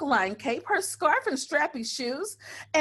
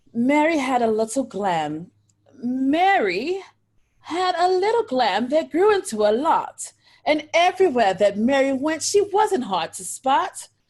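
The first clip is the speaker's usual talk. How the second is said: slow bedtime storytime reading, one word drawn out; 5 dB louder than usual. On a Facebook Live call, the speaker reads a rhyme aloud: reading as if to young children. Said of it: "I'll read it as though I was with my babies".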